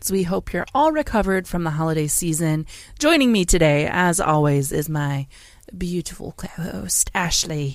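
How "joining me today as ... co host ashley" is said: British accent, slower. Podcast host introducing her co-host, slipping into a British accent. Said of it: "She went British there for a minute".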